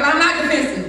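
plain

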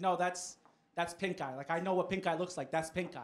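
normal talking voice

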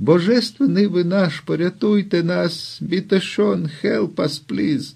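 tiny, thin, high, clowning little voice. Kneeling and bowing before another man, a man pleads for rescue in a thin little voice. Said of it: "примовляючи тонким голоском".

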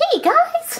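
very high, bubbly, chirpy toy voice. Speakers introduce their toys one by one, bubbly Champy voice. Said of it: "Champy sounds more bubbly".

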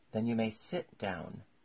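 plain

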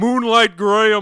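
very high, booming, loud belted shout. Imagining an actor popping up in one's face: James Earl Jones impression. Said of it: "James Earl Jones is gonna s-".

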